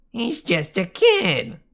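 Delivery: loud, very high falsetto. [name] resentfully mimics his friend Eddie's words back at him: falsetto imitation of Eddie. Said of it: "mimicked in a falsetto voice".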